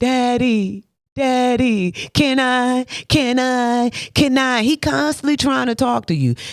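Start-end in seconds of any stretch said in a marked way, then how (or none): 0.0-4.6 put-on very slow, drawn-out, pleading childlike voice. Acting out a child begging God for things: imitating a begging child. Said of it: "Do you just come to him and just beg".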